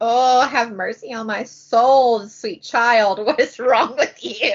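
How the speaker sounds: pushy but loving, doting dad voice. Acting out Juliet's father in a book discussion: imitating Lord Cy. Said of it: "'Cause he's like".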